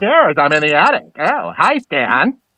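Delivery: animated sitcom-style cartoon alien voice. Speakers trade voices; one answers in the American Dad alien voice. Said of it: "It sounded like the alien from what is that? American Dad?".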